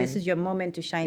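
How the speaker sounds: normal talking voice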